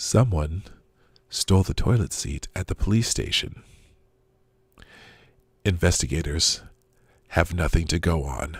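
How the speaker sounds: calm, put-on radio-host newsreader voice. Reading a viewer's super chat joke aloud in an NPR voice. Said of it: "Let's do it in an N P R voice".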